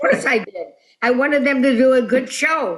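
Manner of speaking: put-on funny German accent. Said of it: "he had a funny accent".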